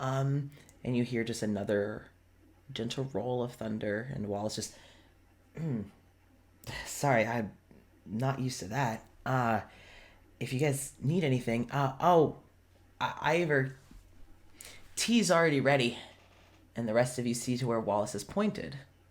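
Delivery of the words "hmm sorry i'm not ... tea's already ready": tense, on edge, halting, stumbling over words. Voicing Wallace behind the counter greeting the group: tense. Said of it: "he seems tense".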